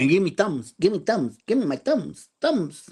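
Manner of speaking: put-on animated cartoon voice. Asking viewers for thumbs up in a put-on voice: Looney Tunes cartoon voice. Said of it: "that was a voice".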